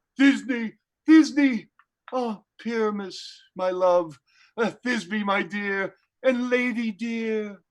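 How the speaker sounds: small, shrunken, monstrous little maiden voice. Offering to play Thisbe too, speaking her lines: Thisbe in a little voice. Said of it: "I'll speak in a monstrous little voice".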